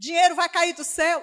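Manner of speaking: loud, high, mocking, scoffing voice.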